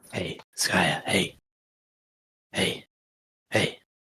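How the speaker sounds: whispered voice. Whispering in Skaya's ear to wake her for watch: whispering in someone's ear. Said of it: "I'll whisper in Skaya's ear".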